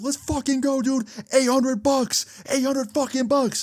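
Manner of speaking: shrill, thrilled, very high excited shout. Retelling the friend's reaction to the slot win: imitating a friend's excited shout. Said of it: "We were so loud".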